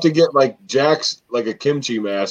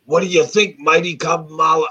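put-on Boston-accented speech; 6 semitones higher than usual. Pitching a show hosted as Kevin Sullivan: Kevin Sullivan in a Boston accent. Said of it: "I have to talk in a Boston accent".

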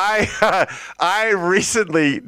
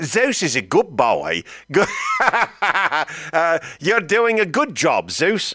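bad put-on Australian accent. Imitating a voice assistant praising a barking dog: imitating Alexa's Australian accent. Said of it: "I'm screwing up the accents".

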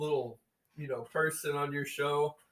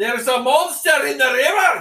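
put-on very high and loud Scottish accent; 11 semitones higher, 14 dB louder than usual. Asked to voice a Pict, Scottish accent. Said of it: "Can you just do a Scottish accent".

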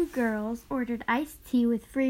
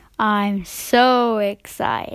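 put-on excitement, very loud, clearly fake excited tone; 2 semitones lower, 9 dB louder than usual. Repeating the line when told louder: louder, put-on excitement.

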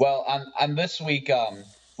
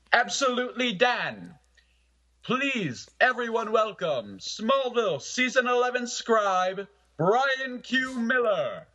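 very high put-on announcer-man delivery; 9 semitones higher than usual. Asked by the co-host, the speaker welcomes the show's special guest in an announcer man voice. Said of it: "in your announcer man voice".

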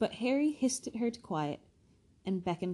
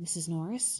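breathy, said on a breath. Narrator reads Ron hearing a snuffling in the dark: breathed. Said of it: "breathed Ron".

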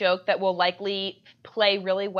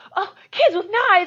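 mock very upset outburst, very high and loud; 11 semitones higher, 6 dB louder than usual. Retelling a movie scene where Dennis gets woken up; imitating Dennis, really upset. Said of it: "He's, like, really upset".

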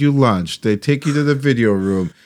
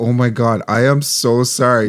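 plain

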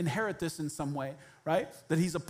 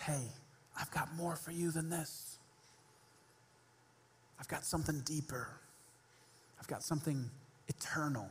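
soft, hushed whisper, close to the ear; 2 semitones lower, 9 dB quieter than usual. Picturing God tapping someone on the shoulder: whispering. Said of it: "taps him on the shoulder and whispers".

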